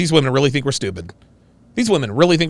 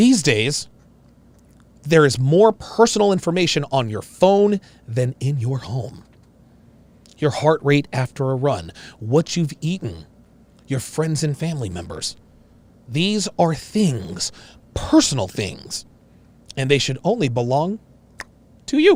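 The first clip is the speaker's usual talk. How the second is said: very, very tender commercial voiceover narration; 2 semitones lower than usual. Quoting the narration of an Apple commercial: imitating tender Apple ad voice. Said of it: "in this very, very tender voice".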